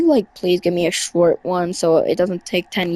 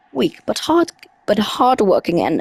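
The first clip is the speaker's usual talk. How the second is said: put-on British accent with swooping tune; 3 semitones higher than usual. Reading a creature's journal entry aloud: put-on British voice. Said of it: "I'm trying the British voice again".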